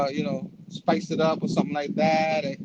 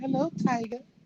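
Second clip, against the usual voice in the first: high, comic put-on woman's voice; 8 semitones higher, 4 dB quieter than usual. Acting out a comic scene where MJ greets him: MJ voice. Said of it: "is that your M J voice?".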